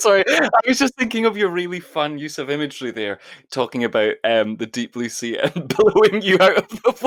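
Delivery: talking through laughter. Explaining to the other speaker why laughing: laughing while talking. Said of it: "why are you laughing?".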